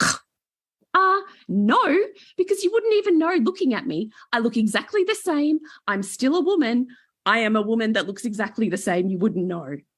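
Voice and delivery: high, swooping, slap-in-the-face put-down tone. Retelling what a woman said back to them, imitating a slap-in-the-face tone. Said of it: "slap of the cheek kind of way tone".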